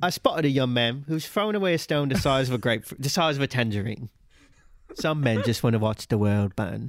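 projected voice, jaw jutted. Showing listeners how to do an impression: Michael Caine impression. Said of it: "how to do a Michael Caine impression".

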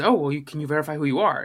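put-on thick Indian accent. Retelling a phone call from a caller, imitating a thick Indian accent. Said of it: "this man has a very thick Indian accent".

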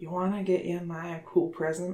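whispering in a character voice. Voicing a character leaning over to another's ear: whispering in character. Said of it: "whispers in Hotel's ear".

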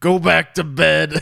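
rough drawl, loud and slow, drawn out. Retelling a movie scene about a wet bed: bad Adam Sandler impression. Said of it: "That was a really bad Adam Sandler".

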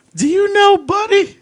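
mock extremely drunk woman's voice, very high, loud. Retelling how a woman approached a man, imitating an extremely drunk woman. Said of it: "obviously extremely drunk".

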